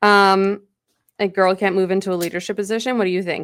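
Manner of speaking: ordinary talk, nothing marked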